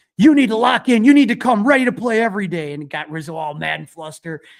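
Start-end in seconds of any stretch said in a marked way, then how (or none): 0.2-2.8 stern, loud, angry yelling. Retelling how Ross chewed out a hungover player: imitating Ross yelling. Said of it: "he yells at Rizzo".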